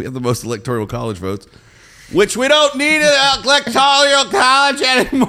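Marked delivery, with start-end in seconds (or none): 2.1-5.3 loud, shrill, very high swooping yell climbing up. Chatting with a co-host on their show, the speaker is yelling. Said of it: "I don't know why I'm yelling".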